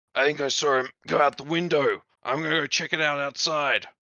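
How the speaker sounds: rough, put-on smoker voice, loud and gruff. Suggesting how a player could voice a bearded smoker character: gruff smoker's voice. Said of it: "So she can go for a gruff voice and say".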